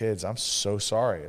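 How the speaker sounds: acted, sincere, earnest tone. Speaker retells apologizing to the kids after reacting; retelling a sincere apology. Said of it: "And I literally am like".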